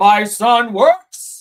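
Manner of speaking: very loud, big booming voice. Joking about what a man should sound like: James Earl Jones voice. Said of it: "you gotta sound like James Earl".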